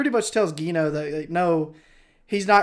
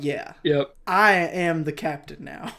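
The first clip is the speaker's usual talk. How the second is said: normal talking voice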